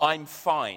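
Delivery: hollow, unconvincing tone, meaning the opposite. Demonstrating a classic harmless lie to an audience, unconvincing 'I'm fine'. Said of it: "In that sort of voice which says, "Well, of course I'm not."".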